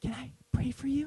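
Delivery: the quietest possible little voice, very hushed. Speaker retells what a girl asked her; imitating a very quiet voice. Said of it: "in the most quiet voice".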